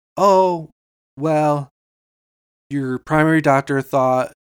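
very slow, drawn-out, ominous, foreboding delivery. Retelling how a woman began giving the speaker news: imitating someone talking very slowly. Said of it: "she's talking very slow".

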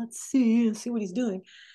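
plain

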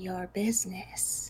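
monstrous, horrible whispered spider voice. Game master voicing a giant spider speaking to the players, horrible whispered spider voice. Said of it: "The spider looks a little unconvinced".

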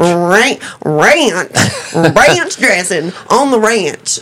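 teasing, mocking, very slow, drawn-out ranch. Retelling how camp kids made fun of how she said ranch: mocking imitation of how she said ranch. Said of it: "made fun of me for was the way I said the word ranch".

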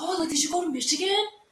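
high-pitched, excited, eager voice. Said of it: "they're like".

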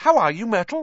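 fake cheerful, pitched very high and loud. Narrator reads a character greeting a glum girl, in a falsely bright voice. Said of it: "said Hermione in a falsely bright voice".

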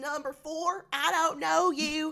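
put-on loud, high-pitched cartoon boy. Recapping an episode, voicing a woman character in a Bobby Hill voice. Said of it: "She does kind of have a Bobby Hill voice".

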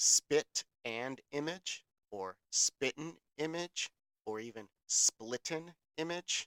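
slow, careful, drawn-out, deliberate enunciation, one by one. Listing similar old forms of a phrase so each sounds distinct: speaking slower. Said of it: "I gotta say this slower".

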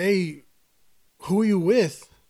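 called out with a loud yell. Retelling how a friend called out in the tunnels: imitating a friend yelling. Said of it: "he yelled out to me".

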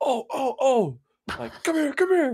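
very high, urgent, excited, swooping call. Retelling how a coworker called from the kitchen: imitating an intense excited call. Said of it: "that's how intense it was".

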